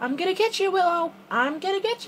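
breaking, very high, hushed squeak. Playing hide and seek, calling to the one hiding, voice cracking. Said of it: "oh my voice crack".

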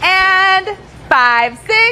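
high, slow, stretched count-in. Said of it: "And now you're gonna do it with them".

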